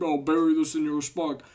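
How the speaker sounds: dopey, goofy thug-like goon voice. Describing a character's first line, quoting it in a goon voice. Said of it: "literally sounded like a goon".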